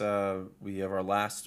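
plain

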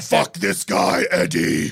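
slow, drawn-out, rough and creaky monster voice. Imitating Tom Hardy's Venom egging Eddie on: Tom Hardy's Venom voice. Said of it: "Tom Hardy's Venom being like".

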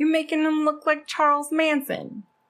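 bad put-on Philadelphia accent. Retelling a woman confronting a man in a story, bad philly accent. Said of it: "That was my Philly accent".

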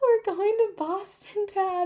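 sobbing, very high-pitched, bawling through tears. Retelling crossing the marathon finish line to dad: imitating own sobbing speech. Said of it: "and I'm bawling".

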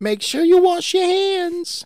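put-on loud, very high voice with slight New York accent. Quoting a mouse from a TV episode while discussing a gif; Tutter voice, slight New York accent. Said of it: "He's got that slight New York accent".

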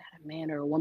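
mock whispering. Retelling how men reacted to a Halloween cosplay, imitating men whispering. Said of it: "I could hear men whispering like".

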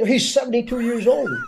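high, loud, indignant voice.

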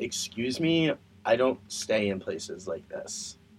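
soft, put-on petulant tone. Retelling their own past reaction on arriving at a run-down motel, mock petulant. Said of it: "my petulant childness just coming out".

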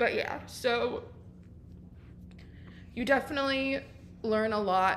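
tearful voice. Getting emotional while talking about high school and mental health, crying. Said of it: "Ew, I'm crying".

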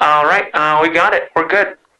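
voice through booth talkback. Acting as someone punching into the studio: studio punch-in voice. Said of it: "my punch-in voice".

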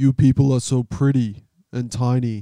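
loud, booming villain voice. Reading a Thor quote aloud: Thanos voice. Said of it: "You kinda sound like Thanos there".

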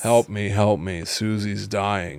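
bored monotone voice. Imagining the payphone message voice asking for help, bored monotone voice. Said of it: "I love the idea of it being a monotonous voice".

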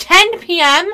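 very loud, high-pitched, incredulous, disbelieving shout. Reading out a news story, the host hears the arrest time and breaks off, yelling. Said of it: "I didn't mean to yell".

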